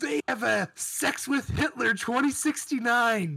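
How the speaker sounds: way too excited. Gaming podcast host riffing on a secret game sequel: overexcited. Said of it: "Your voice got all distorted with that one".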